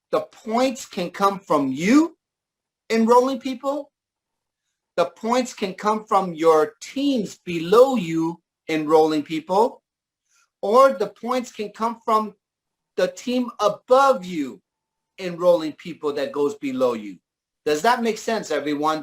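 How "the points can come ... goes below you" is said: very slow, deliberate delivery, each point laid out. Explaining to a group how points can be earned: speaking very slowly. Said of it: "I'm gonna say this very slowly".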